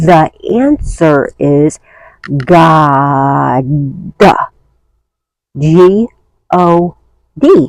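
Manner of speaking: very slow, words spaced apart, "God" stretched out. Repeating an answer after saying it too fast: slowed down. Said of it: "Let me slow it down".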